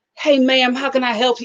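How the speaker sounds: deep, pleasant southern voice. Retelling a cashier greeting her at an airport counter: imitating a deep, pleasant Southern voice. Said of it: "It was very Southern and pleasant".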